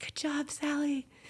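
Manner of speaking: quiet, high, faint voice.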